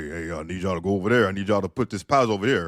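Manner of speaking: dark, deep caped-hero voice. Retelling how a hardworking man he knew gave instructions, in his deep voice. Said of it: "He had a deep ass voice. This this dude sounded like like Batman".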